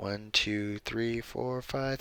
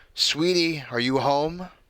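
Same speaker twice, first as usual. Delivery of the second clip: cheerful, pitched-up, raised motherly call; 5 semitones higher, 5 dB louder than usual. A mother, just home with shopping bags, calls out to her child in a cheery voice. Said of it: "My mother called in a cheery voice".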